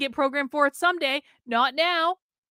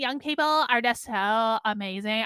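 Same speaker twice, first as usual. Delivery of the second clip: put-on voice, gushing and full of awe; 4 semitones lower than usual. Mid-conversation, the speaker slips into a Katie Herzog voice. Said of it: "I don't know why I'm using my Katie Herzog voice for this".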